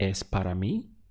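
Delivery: rising tune on Es para mí, climbing to mí. Showing a learner how to turn a statement into a question: rising question intonation. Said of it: "use the intonation of your voice".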